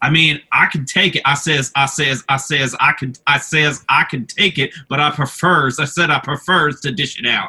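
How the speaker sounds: put-on laid-on southern accent. Telling the other speaker a favorite Foghorn Leghorn joke, Foghorn Leghorn voice. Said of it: "that classic like southern".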